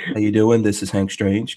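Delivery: put-on seductive, sexy voice. Demonstrating how he sounds when leaving a phone message, sexy voicemail voice. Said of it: "I put my sexy voice on when I'm leaving a message".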